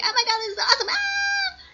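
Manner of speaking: very high, excited gushing squeal. Retelling online reactions to the movie, imitating excited fan reactions. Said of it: "I hate when I do that voice".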